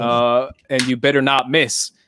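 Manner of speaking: plain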